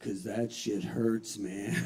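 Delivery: understated, soft, quiet aside, delivered a beat late. Retelling a performer's quiet follow-up to his joke: imitating someone saying it more quietly. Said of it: "a little more quietly".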